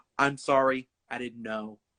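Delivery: very clear, carefully spoken speech. Retelling an apology to a museum guard: speaking very clearly. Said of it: "I'm speaking very clear".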